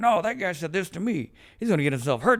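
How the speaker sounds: play-acted fiery, indignant, angry tone. Retelling arguing with his dad as a teenager: imitating his angry younger self. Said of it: "I wanna be mad at the dude".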